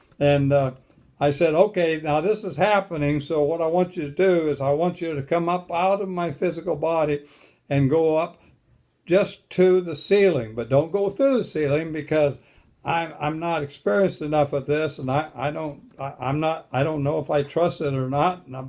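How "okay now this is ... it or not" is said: normal talking voice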